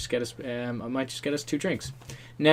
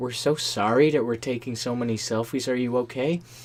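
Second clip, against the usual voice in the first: put-on American accent. Retelling what a couple turned and said to them: put-on American accent. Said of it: "In an American accent".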